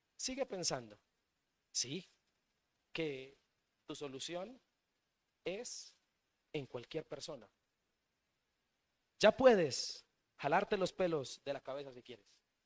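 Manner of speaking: openly sarcastic, jabbing delivery. Preaching on Psalm 60 to listeners, sarcastic. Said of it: "Quiero ser sarcástico".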